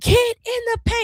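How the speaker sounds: very high, screamed yelling. Retelling watching a game on TV: imitating someone screaming. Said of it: "I was screaming at the T V".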